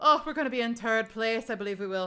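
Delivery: heavy, thick Irish brogue, th as t, third as tird. Retelling what some Irish people said about their placing, in a thick Irish accent. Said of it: "had such a thick accent that they were pronouncing their ths as just t's".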